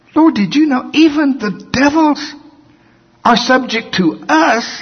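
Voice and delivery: acted, very high, astonished cry. Reading verse 17, acting out the seventy returning to the lord, mock-astonished. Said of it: "they're like shocked".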